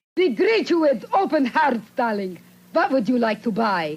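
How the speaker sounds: high voice with big swooping pitch changes. Joking about how a hostile character sounds: Natasha voice. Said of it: "she greeted you in exactly the tone".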